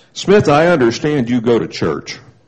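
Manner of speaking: low, gruff, deep voice. After long thought he rings the buzzer and calls smith in, gruff. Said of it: "he said gruffly".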